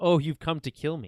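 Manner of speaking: startled and caught off guard, audibly shocked. Retelling how a character reacts on screen: imitating a shocked character.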